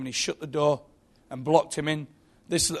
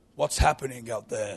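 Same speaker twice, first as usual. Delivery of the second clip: very wise, sage-like, lower voice; 4 semitones lower than usual. Retelling how a Gorgonite speaks to a little boy, in a very wise voice. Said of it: "it's a dead wise voice".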